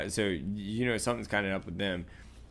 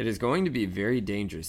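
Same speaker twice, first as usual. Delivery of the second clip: usual speaking voice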